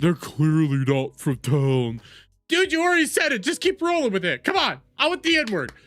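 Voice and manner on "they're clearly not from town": mocking, pointed, low, drawn-out voice. Mocking a commentator's words while reacting to a clip: mocking imitation of someone. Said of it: "Now you're like".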